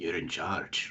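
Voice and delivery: whispering in a put-on character voice. Voicing Big Shrek as the others leave: Big Shrek whispering. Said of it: "Big Shrek whisper".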